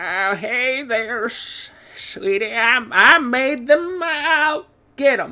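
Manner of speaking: put-on shaky elderly man voice, soft. Trying out voices for a character's line, in an old rickety man voice. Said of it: "So that's uh old rickety man".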